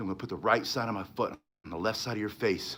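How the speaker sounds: enlightened, serene calm. Retelling a calm fighter's line to a bad guy: imitating someone speaking very quietly. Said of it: "very quietly".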